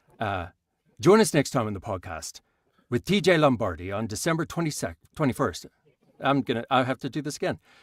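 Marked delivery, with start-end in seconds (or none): 1.0-5.7 put-on Irish accent in a read-out style. Rereading the podcast sign-off on request, in an Irish accent. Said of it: "would you mind reading that in an Irish accent".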